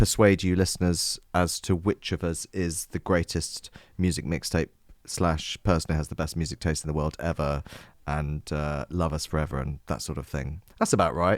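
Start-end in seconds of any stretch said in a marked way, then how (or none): none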